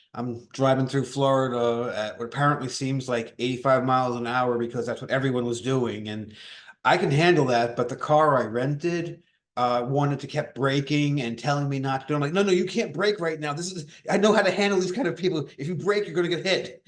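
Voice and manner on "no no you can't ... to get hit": insistent, urgent scolding, acted out. Retelling yelling at a rental car that kept braking: retelling yelling at a car. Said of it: "yelling at the car to stop it".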